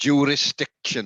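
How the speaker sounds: slow, high, loud Welsh accent. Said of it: "It's very pleasing to say in a Welsh accent".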